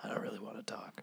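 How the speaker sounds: soft, creaky, sore-throat whisper.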